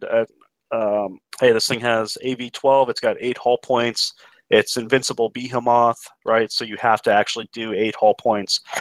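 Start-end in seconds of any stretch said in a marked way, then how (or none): none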